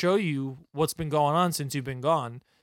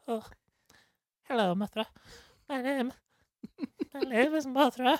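put-on prim Scottish lady voice, higher; 9 semitones higher than usual. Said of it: "sounds a little bit like Professor McGonagall".

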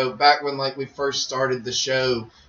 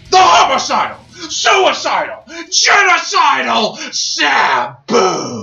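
booming, drawn-out wrestling announcer voice, slow and swooping; 12 semitones higher, 8 dB louder than usual. Introducing a wrestler's name with hype: Paul Heyman wrestling intro voice. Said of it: "Or as I like to say it like this".

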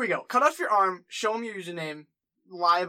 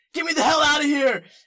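loud, high-pitched shout. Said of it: "and he says".

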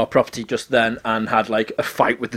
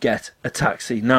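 ordinary delivery

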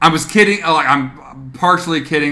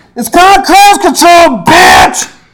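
very high, very loud, shrill furious yell; 12 dB louder than usual. Retelling a highway road-rage moment, yelling at another driver, retelling a yell. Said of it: "I was just like yelling at her".

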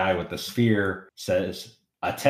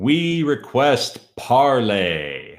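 resounding, booming, loud call; 4 semitones higher, 5 dB louder than usual. Narrating a scene, one of an approaching group calls out: booming voice. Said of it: "you hear the booming voice of".

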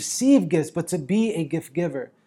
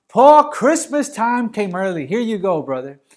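put-on loud yelled calling out; 4 semitones higher, 5 dB louder than usual. Retelling Epaphroditus arriving at Paul's door, imitating Epaphroditus yelling out. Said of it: "he yells out".

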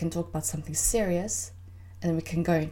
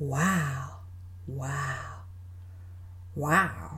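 easygoing, laid-back, slow drawn-out "wow"; 3 semitones lower, 3 dB quieter than usual. Back on her podcast after a long break, [name] does an Owen Wilson 'wow' impression. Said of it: "You like my own Wilson impression?".

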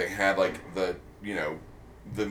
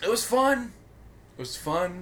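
slightly raised pitch; 10 semitones higher than usual. Speaker answering in a conversation, slightly higher pitched. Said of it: "your voice got slightly higher pitched".

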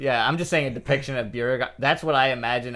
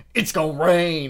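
put-on tv announcer voice, higher and louder; 5 semitones higher, 5 dB louder than usual. Listing an actor's roles and quoting his TV announcer character: Ollie Williams voice. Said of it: "like that guy".

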